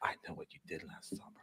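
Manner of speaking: sultry, seductive whisper, very soft and close. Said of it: "seductively close and like whispers in her ear".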